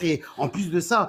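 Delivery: plain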